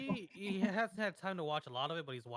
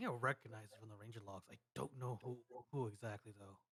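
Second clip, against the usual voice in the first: hushed half-whisper in a character voice; 7 semitones lower, 8 dB quieter than usual. Voicing a character who says he recognizes something from logs: half-whispering in character. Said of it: "whispers and he goes".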